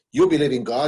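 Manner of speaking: pointed, probing, interrogating tone. Retelling a communist roommate's question: imitating an interrogative tone. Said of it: "the very kind of interrogative tone".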